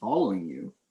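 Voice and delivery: smug, self-satisfied, smirking tone. Voicing a stranger who was asked why he follows them: smirking. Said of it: "smirks and he's like".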